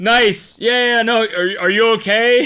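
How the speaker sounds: amused mock concern, high and loud.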